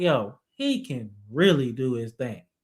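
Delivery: ordinary talk, nothing marked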